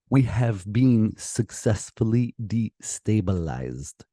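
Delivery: fake, put-on Russian accent. Explaining a defector's theory, speaking in a put-on Russian accent. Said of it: "I tried to bring out a, a Russian accent".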